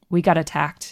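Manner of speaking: ordinary talk, nothing marked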